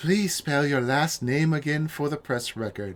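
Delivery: gentle, calm, soothing delivery. Giving different people different voices while reading their lines, soothing voice. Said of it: "Soothing, soothing".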